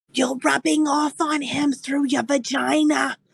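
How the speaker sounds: exaggerated, very loud stage whisper. A player's character speaks up in a loud stage whisper. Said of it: "I'm gonna whisper very loudly".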